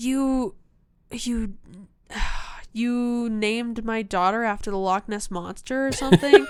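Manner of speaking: angry, mad, sputtering and stammering outburst. Retelling a scene where Bella confronts someone, imitating Bella getting mad. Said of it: "And she gets really mad".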